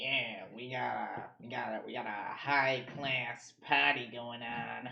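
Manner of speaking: deep, slow, drawn-out goblin character voice. Voicing a goblin who invites the players to a party: goblin voice. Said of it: "The other goblin pipes up".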